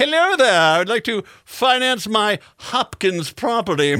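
posh upper-class rich gentleman voice. Joking about financing a property with a monocle and top hat: fancy top-hat gentleman voice. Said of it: "with, like, a monochrome glass lens and wearing a top hat".

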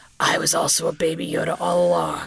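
over-the-top gravelly, rough, creaky character voice. Retelling a show's ending, a character takes his helmet off: extreme character voice. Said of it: "in his like extreme his extreme voice".

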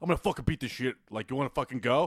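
taunting, bruiser-like tough guy voice. Describing a big jacked guy who messes with people in a bar: imitating a jacked bar tough guy. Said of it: "a big jack guy in a bar that, like, the, his way to, like, fuck with people is be like".

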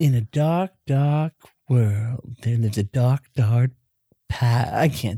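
low, spooky, ominous, creepy storyteller narration. A podcast host starts a spooky intro before breaking off: creepy voice. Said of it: "You sounded creepy enough".

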